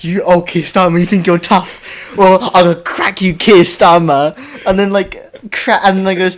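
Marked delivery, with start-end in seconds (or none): 0.0-4.4 put-on British guy voice. Retelling what a bald British guy says to the camera: imitating a bald British guy. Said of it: "he literally sits there and goes".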